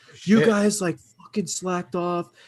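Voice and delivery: put-on, acted-out scolding yell. Retelling how the professor yelled at the class: imitating a teacher yelling. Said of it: "he started yelling at the class".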